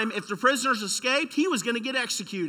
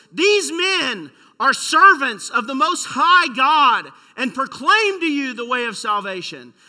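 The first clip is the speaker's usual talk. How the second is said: loud, slow, drawn-out heckling cry; 5 dB louder than usual. Preaching about the possessed girl following Paul, retelling her loud heckling. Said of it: "She had a real loud voice".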